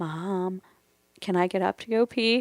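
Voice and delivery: very quiet, hushed, slow and drawn-out. Retelling calling to Mom from bed as a child: imitating saying it very quietly. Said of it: "so I said very quietly".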